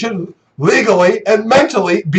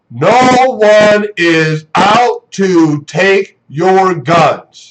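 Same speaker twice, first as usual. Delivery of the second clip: very slow, deliberate, spelled-out delivery; 3 semitones lower than usual. Speaker addresses people who aren't listening about guns, saying it really slowly. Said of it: "I'm going to say it really slowly now".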